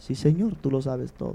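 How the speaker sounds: put-on quiet, low voice. Retelling Peter's second answer to Jesus, acting out a lowered voice. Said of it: "empieza como a bajar el tono de voz".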